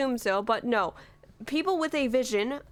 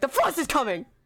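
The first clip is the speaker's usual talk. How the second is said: loud put-on character voice; 2 semitones higher than usual. Showing what loud line to avoid: loud Freminet voice. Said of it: "don't try to do his loud voice".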